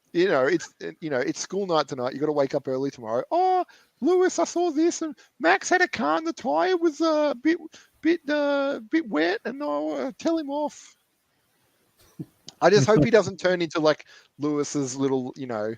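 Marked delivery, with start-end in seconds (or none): 3.2-10.9 put-on very high, slow, drawn-out childlike voice. Imitating George speaking to Lewis, in a high-pitched George impression. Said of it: "George has a very high pitched voice".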